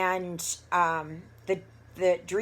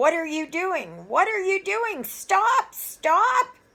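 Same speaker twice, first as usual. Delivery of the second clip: mock frantic, very high, rising scream; 13 semitones higher, 6 dB louder than usual. Retelling a near crash, screaming at the driver: imitating someone screaming. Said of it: "I was screaming at him".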